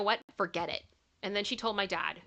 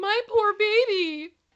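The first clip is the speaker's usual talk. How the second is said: high, raised, motherly muttering; 12 semitones higher, 9 dB louder than usual. Retelling the mother's reaction to the smashed cake: imitating a mother muttering. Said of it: "just literally the mom going".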